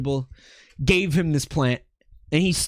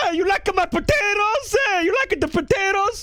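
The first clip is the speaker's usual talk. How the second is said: very high-pitched voice. Retelling how Dad walked in asking about his plants: imitating Dad. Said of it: "He walks over and he's like".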